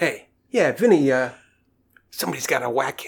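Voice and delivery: put-on tough-guy Brooklyn mobster accent. Acting out a customer using the restaurant phone, in a Brooklyn accent. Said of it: "this is where the Brooklyn accent comes in".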